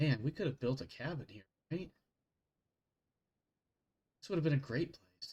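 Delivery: ghostly, soft whisper drifting off. Game narrator voices a familiar voice whispering to a player's character: whispering. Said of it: "a familiar voice whispers to you".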